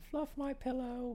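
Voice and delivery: very high, soft, hushed put-on British woman voice. Teasing the other speaker by repeating their line in a woman voice. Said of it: "That was my woman voice".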